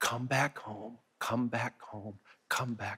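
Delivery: whispering. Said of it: "who just keeps whispering".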